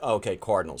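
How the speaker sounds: ordinary delivery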